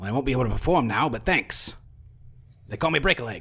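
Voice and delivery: rasping, raspy wooden skeleton-puppet character voice. Voicing a tangled skeleton marionette in a tabletop game, raspy skeleton marionette voice. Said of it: "you see a wooden marionette carved and painted to look like a human skeleton. / you see a wooden marionette carved and painted to look like a human skeleton. / a raspy voice says, / I need him if I ne".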